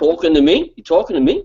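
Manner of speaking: put-on heavy Brooklyn New York accent. After saying they hate New York accents, mimicking one: heavy Brooklyn accent. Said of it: "heavy Brooklyn, New York accent".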